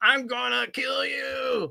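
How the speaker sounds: slow, rough, angry, drawn-out monster voice. Speaker retelling a scene, ending on the Hulk's line; Hulk impression. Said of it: "That was my best Hulk impression".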